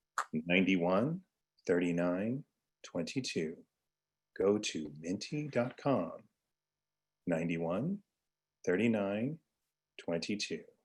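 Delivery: smooth jazz radio delivery. Repeating a code shown on screen, in a smooth jazz radio voice. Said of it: "using my smooth jazz radio voice".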